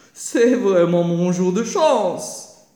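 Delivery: loud, delighted, cried-out exclamation. The fox spots her playing injured in front of him: exclaimed. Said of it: "s'écria ce dernier".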